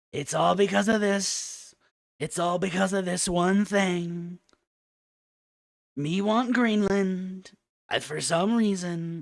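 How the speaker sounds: put-on mocking impression voice. Answering a viewer's question by putting on a mocking voice. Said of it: "I'll tell you with a voice".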